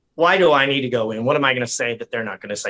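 ordinary talk, nothing marked

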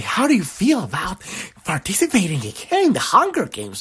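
flamboyant, excited announcer voice with swooping pitch. Retelling a flamboyant newscaster talking about murder: imitating an excited newscaster. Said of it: "all excited".

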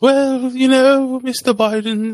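put-on very high-pitched, slow English accent. Imitating the Queen speaking to Biden: imitating the Queen, English accent. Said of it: "I can't do a real English accent".

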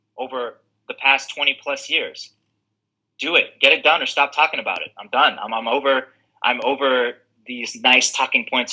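plain

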